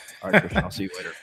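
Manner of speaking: put-on toned-down voice. Describing how his tone drops as he ends phone calls: mock toned-down call ending. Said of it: "kind of tones down".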